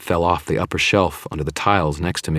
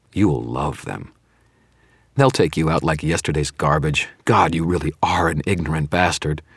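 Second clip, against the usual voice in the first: plain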